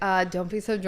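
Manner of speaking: plain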